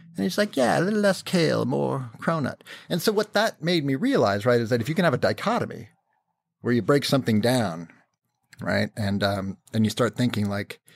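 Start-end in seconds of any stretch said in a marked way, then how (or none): 0.6-2.6 put-on British accent, slightly higher pitch. Retelling a meeting with the CEO, quoting him: Mark Thompson British accent. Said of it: "he's got a British accent, and I'll, I'll do it".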